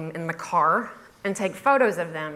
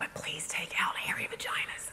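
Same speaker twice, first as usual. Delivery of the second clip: very quiet, hushed whisper; 2 semitones lower, 12 dB quieter than usual. Retelling what the advertisers came back and asked for, whispering.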